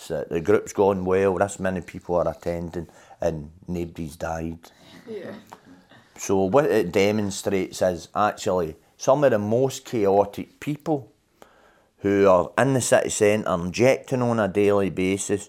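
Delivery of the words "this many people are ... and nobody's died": ordinary delivery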